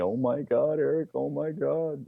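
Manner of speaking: scared, high-pitched, very drawn-out pleading. Retelling a friend crouched behind him grabbing his shirt, imitating a scared high-pitched voice. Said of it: "he's got this high-pitched voice saying to me".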